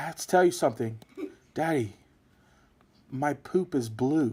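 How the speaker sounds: soft, earnest, hushed, worried half-whisper. Father retelling his five-year-old daughter's news, imitating her half-whisper. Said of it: "she's whispering because she knows I'm recording".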